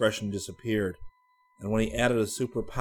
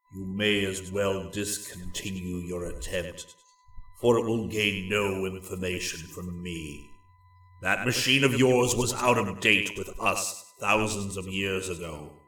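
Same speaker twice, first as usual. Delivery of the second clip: profoundly deep, bottomless bass register voice; 2 semitones lower than usual. Reading a story aloud, voicing a captive: profoundly deep bass voice. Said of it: "spoke in a profoundly deep bass voice".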